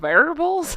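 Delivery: Southern drawl slipping out, with rising pitch. Reading out a word aloud: southern accent. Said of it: "my Southern accent just came out".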